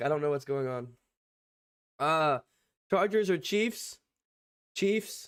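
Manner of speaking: strained voice, struggling to get words out. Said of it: "I can't even talk".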